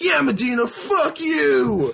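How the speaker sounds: acted very high-pitched, slow, tipsy drunken rant. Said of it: "maybe a little intoxicated".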